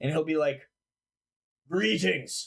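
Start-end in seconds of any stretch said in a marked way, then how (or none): 1.7-2.5 undead armored guard character voice. Voicing an undead creature in armor greeting the players: undead armored guard voice. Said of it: "the undead guy in armor will turn around".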